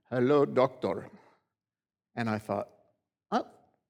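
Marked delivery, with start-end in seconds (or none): 0.1-1.0 imitated Indian accent. Retelling what the man checking members at the door said, Indian accent. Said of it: "in his Indian accent".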